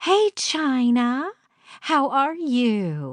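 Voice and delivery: light, bubbly, swooping, very slow, "you" drawn out. A visitor arriving on the gravel greets China, in a light, bubbly voice. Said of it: "a light and bubbly voice".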